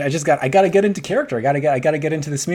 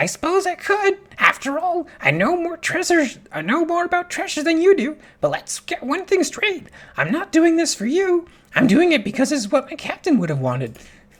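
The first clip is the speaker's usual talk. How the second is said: very high, squawking parrot voice; 14 semitones higher than usual. Returning to a parrot character, parrot voice. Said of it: "back to parrot voice".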